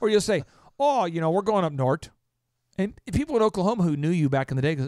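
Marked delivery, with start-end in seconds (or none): 0.8-2.1 Minnesotan way of talking. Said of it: "you'll start to talk like you're from Minnesota".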